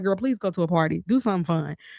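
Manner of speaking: put-on pleading, begging voice. Recalling what her mama used to say to her, imitating mama pleading. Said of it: "My mama would beg me".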